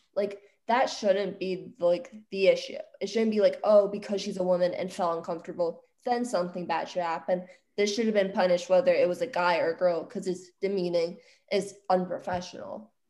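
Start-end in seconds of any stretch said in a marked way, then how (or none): none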